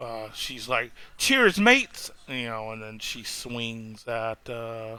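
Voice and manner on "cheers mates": high, loud piping voice. Voicing an NPC who greets the group: sounds like Tracer. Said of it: "She sounds like Tracer".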